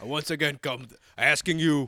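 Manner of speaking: put-on thick, laid-on-heavy Brooklyn accent. Quoting a meme line, imitating Bernie Sanders. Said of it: "He does that thick, like, New York accent".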